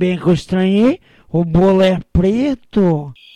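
put-on drunk voice. Telling a joke, the drunk answers the man at the party, fake drunk voice. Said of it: "Faz a voz de bêbado".

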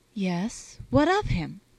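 faintly defiant. Adele answers Constance's question about the man, with a note of defiance. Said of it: "with almost a note of defiance".

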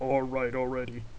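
low, heavy, grumbling baritone growl. Narrating a crew waiting in line, reading Brian's reply: Brian's low baritone growl. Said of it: "Brian's low-pitched baritone voice growled".

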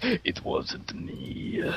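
playful character voice. Denying making a stray sound in the group chat, a speaker uses a Metal Gear character voice. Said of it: "Are we still doing the Metal Gear voices?".

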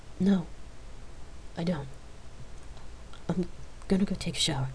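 whispered, soft and tearful, sniffling back tears. Asked if she wants to talk about it, she answers soft, sniffling back tears. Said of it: "Rain answered softly, smiling, sniffling back her tears".

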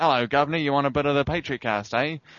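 put-on British back-alley hawker accent. Joking about a British back-alley crack seller: put-on British back-alley dealer voice. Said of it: "in some British back alley sort of selling crack or something like".

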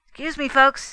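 quick, hurried delivery. Fay excuses himself to the folks while heading for the door, said rapidly. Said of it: "he said rapidly".

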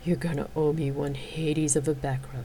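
chuckling softly. Narrator reading Xena's line to her partner, the bard, chuckling softly. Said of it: "Xena chuckled softly".

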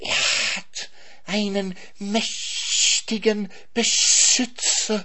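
shrill, very high, very slow, long-drawn snake hiss. Reading the snake's line as the swan arrives behind Bimbo: hissed. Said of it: "zischte die Schlange".

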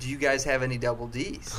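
plain

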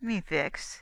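grunted, grunting. Billy Jackrabbit answers the girl's greeting, grunting. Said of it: "he grunted".

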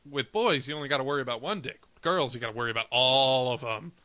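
usual speaking voice

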